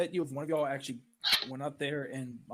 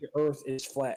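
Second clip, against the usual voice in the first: ordinary talk, nothing marked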